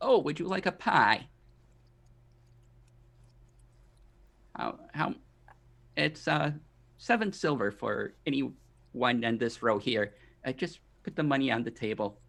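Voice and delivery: put-on elderly woman character voice. A pie seller offering pies to a customer at her stand, old woman voice. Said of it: "this old woman".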